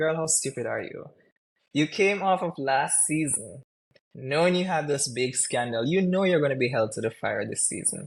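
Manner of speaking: ordinary talk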